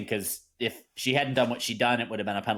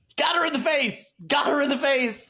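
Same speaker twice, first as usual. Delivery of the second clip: very high, mock insistent, repeated yelling; 4 dB louder than usual. Retelling a call made at the end of a game: retelling own yelling. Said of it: "I just kept yelling".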